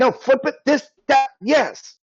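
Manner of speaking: shrill, very high-pitched yell. Voicing a character yelling at a player character struggling with rope: NPC yelling at a player. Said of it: "She starts yelling at you".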